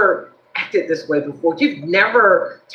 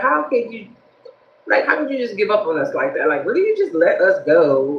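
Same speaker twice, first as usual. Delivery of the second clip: ordinary talk, nothing marked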